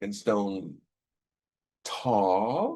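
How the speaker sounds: sarcastic evil sneer, words drawn out. Describing a character's reaction to another, imitating an evil sneer. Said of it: "little bit of an evil sneer as he".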